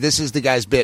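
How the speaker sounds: ordinary talk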